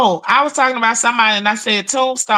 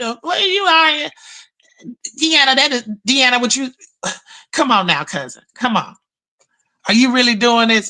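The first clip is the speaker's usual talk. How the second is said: snooty, posh, uppity, high-class voice. Retelling a cousin's reaction to cussing: imitating an uppity high-class cousin. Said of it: "He's a little high class on that end".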